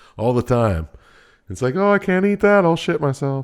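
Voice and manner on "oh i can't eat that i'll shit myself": put-on very high elderly lady voice. Mimicking the old people the speaker works with, old lady impersonation. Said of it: "Great old lady impersonation you just did".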